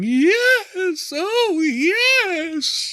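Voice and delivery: high screech, with "yes" drawn out. Retell Paul Bearer's outburst as the lights go out, in a screeching Paul Bearer voice. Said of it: "Paul Bearer starts screeching".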